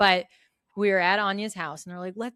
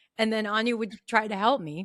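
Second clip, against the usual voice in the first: ordinary talk, nothing marked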